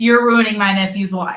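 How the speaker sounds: plain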